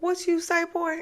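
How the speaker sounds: very high-pitched voice. Retelling Shanita's reply to a boy who cursed, imitating Shanita's mama voice. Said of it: "that mama voice".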